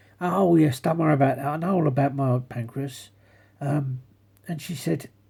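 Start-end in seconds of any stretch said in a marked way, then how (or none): none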